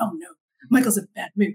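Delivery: hushed stage whisper. Retelling what the parents say when they come over: imitating half-whispering. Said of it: "they're, like, whispering".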